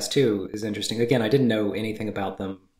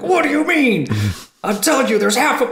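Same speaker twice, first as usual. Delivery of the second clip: mock-aggressive voice, much higher pitched; 14 semitones higher, 8 dB louder than usual. Describing how Hunter, as Jack, handled the phone call about the half pig: imitating Hunter's aggressive delivery. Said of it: "came at it like so aggressively".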